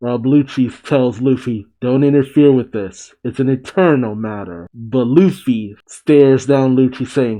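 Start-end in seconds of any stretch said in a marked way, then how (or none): none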